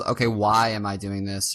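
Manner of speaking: ordinary talk, nothing marked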